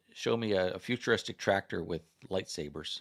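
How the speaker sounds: normal talking voice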